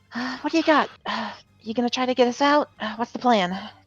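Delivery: muttering under breath. As Lana, sending a hidden message to Reeves, muttering under her breath. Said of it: "quietly try to mutter under her breath".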